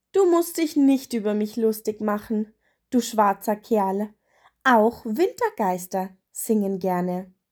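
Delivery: ordinary delivery, nothing marked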